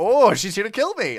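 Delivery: mock excitable voice. Describing how a character sounds in the Japanese version: mock excitable voice. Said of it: "very like excitable in ways I wasn't expecting".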